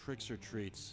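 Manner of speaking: completely depressed, dejected, flat tone. Saying a line the game calls loudest, but completely depressed. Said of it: "He just sounded completely depressed".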